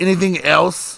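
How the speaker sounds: curt, attitude-filled tone. Retelling a donut shop clerk greeting a customer: imitating a clerk's attitude. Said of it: "had all kinds of fucking attitude".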